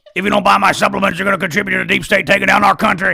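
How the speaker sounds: fast, rough auctioneer-style rattle. Mocking the supplement seller from Texas, fast auctioneer-style Alex Jones.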